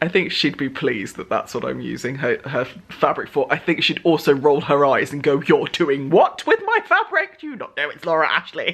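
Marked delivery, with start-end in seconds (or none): 5.4-8.7 put-on posh granny voice, high and swooping. Speaker acting out Granny's imagined reaction, in her faux posh voice. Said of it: "In her faux posh voice".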